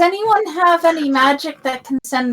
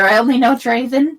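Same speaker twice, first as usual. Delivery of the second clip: ordinary talk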